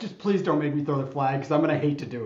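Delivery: mock, fast, pleading, begging tone. Retelling a veteran referee's warning to a player, mock begging. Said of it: "he's begging".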